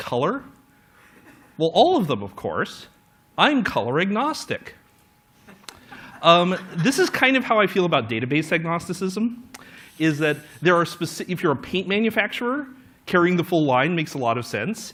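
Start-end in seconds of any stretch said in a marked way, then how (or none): 0.0-4.8 swooping, faintly scornful and condescending tone. Acting out a customer answering a paint salesman: slightly disdainful. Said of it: "with this slightly disdainful expression and you say".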